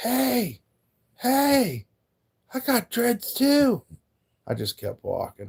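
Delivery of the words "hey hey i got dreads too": very high, very slow, drawn-out shouting. Retelling a stranger calling out while they kept walking: imitating someone yelling. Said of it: "This motherfucker starts yelling at me".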